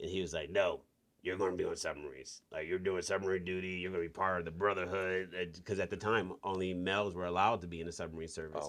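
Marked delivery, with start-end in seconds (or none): 0.5-5.3 put-on old salty sailor voice. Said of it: "He's an old salty sailor, so that's how he talked".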